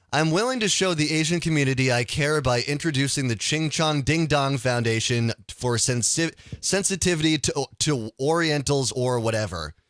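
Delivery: ordinary talk, nothing marked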